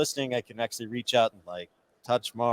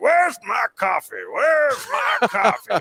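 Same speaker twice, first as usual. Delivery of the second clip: put-on very high, swooping child's voice; 12 semitones higher, 4 dB louder than usual. Retelling how a daughter walks around in dad's shoes: imitating a daughter imitating dad. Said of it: "but she'll go like".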